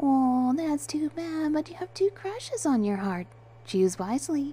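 playful teasing, sly chuckle. Penny replies to the narrator with a mischievous chuckle. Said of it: "chuckled with a hint of mischief to her tone".

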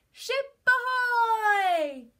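very high, very loud shouted call. A pirate calls from the crow's nest, shouting. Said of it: "Pirate Violet shouted from the crow's nest".

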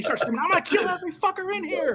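very high shrieking put-on voice, screamed. Telling the story of a man on a plane who starts screaming, retelling a screamed threat. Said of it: "He starts screaming".

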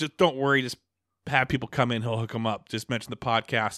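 normal talking voice

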